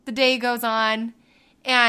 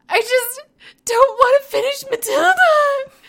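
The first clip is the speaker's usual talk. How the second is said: put-on high, loud childlike wail on the verge of bawling. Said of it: "and just starts bawling".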